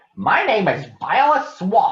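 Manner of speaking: scratchy, scraping, very high-pitched voice. Reading a story, a lady introduces herself to the kids: Violet Swamp's scratchy voice. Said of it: "said the lady in a scratchy voice".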